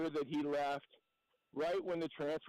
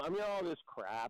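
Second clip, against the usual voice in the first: ordinary talk, nothing marked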